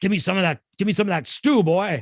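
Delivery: gruff, slightly Texan voice. Retelling the Bible story, Esau speaking to Jacob, gruff Esau voice. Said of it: "I kind of picture Esau had this gruffly voice".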